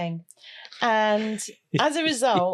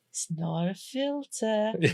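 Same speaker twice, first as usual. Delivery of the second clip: mock creepy child voice, high-pitched, quieter; 7 dB quieter than usual. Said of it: "like one of those creepy children out of a horror movie".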